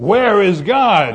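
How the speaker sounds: booming, very loud stern bellow. Telling a story, the pastor demands an answer from a silent boy, bellowing. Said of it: "raised his voice even more and shook his finger in the boy's face and bellowed".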